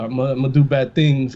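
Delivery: ordinary talk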